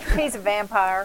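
loud, teasing, mocking put-on Tennessee accent. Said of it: "I'm making fun of my own people".

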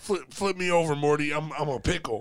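put-on high-pitched cartoonish old man. Joking with friends about a cartoon, a speaker does a Rick voice. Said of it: "that's a good voice".

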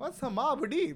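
put-on very high, slow Indian accent. Imitating a wife asked who mobb deep is: imitating wife in indian accent.

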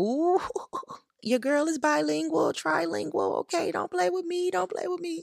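very high, excited, proud boastful tone.

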